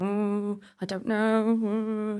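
blank, stumped, vague voice, "know" drawn out. Recalling asking a husband which vegetable he'd be, the speaker is imitating Will. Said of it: "That's my Will voice".

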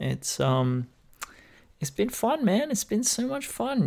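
very high-pitched, sarcastic false enthusiasm. Describing two weeks stuck at home in lockdown: sarcastic, unenthusiastic. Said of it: "you can hear it in my voice".

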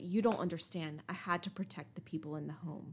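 normal talking voice

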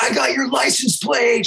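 high, shouted call. Retelling a neighbor yelling at a driver: imitating a neighbor yelling. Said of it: "She's, like, yelling at him".

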